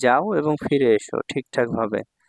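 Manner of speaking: ordinary delivery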